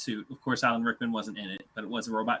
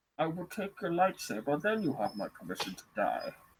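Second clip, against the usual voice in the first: pitch swinging widely like a villain; 4 semitones higher, 4 dB quieter than usual. Playing General Grievous as voiced by Tom Hardy's Bane: Tom Hardy's Bane voice. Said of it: "General Grievous should have been voiced by Tom Hardy's Bane".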